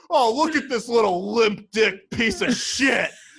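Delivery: loud, high, put-on angry rant, played up big. Retelling a reviewer mocking droopy pizza: imitating Dave Portnoy's fake anger. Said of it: "so good at, like, being fake angry".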